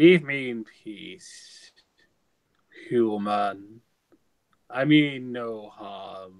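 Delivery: very slow, low, drawn-out grumbling. Asked if he is a sea demon, the creature answers the human, speaking very slowly. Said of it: "He speaks very slowly".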